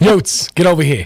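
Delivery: put-on mobster, tough-guy voice. Joking around, calling Yotes over in a put-on mobster voice. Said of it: "[name], why are you talking like that?".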